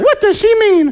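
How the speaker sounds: put-on very high-pitched girlish voice. Speaker on misreading a message's tone, in a mock girl's voice. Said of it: "I don't know why I did a girl's voice".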